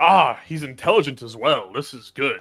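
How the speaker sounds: dry, loud, cutting, mocking sarcastic tone. Speaking in character to a guild member who just spoke: sarcastic. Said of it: "I say sarcastically".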